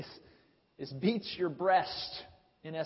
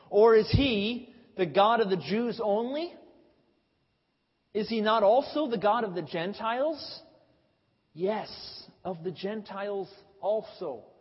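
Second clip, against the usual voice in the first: put-on loud, derisive, sneering, taunting tone; 4 semitones higher, 7 dB louder than usual. Speaker quoting Paul from Romans 3, acting out a mocking tone. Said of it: "in somewhat of a mocking tone".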